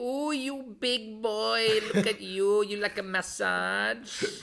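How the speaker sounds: loud, very high, put-on Vietnamese accent. Retelling how you come in during the story, in a Vietnamese accent. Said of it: "my Vietnamese accent".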